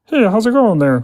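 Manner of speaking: very high ventriloquist voice, mouth closed, lips still. Showing someone a voice trick, speaking as a ventriloquist. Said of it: "look look at this".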